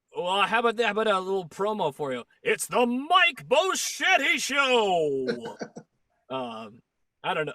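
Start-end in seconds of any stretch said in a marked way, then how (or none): 2.5-5.6 put-on loud, very slow old-time radio announcer voice. Asked for an announcer voice like years ago, giving a promo: old-fashioned announcer voice. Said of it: "could you do like like a real like announcery voice like they did years ago".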